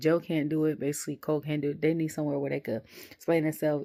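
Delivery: ordinary talk, nothing marked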